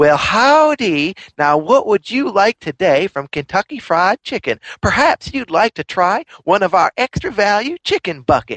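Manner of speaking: Southern belle voice, high-pitched. Describing the voice that greets customers at Kentucky Fried Chicken, doing the Kentucky Fried Chicken Southern belle voice. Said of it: "it's a Southern Belle".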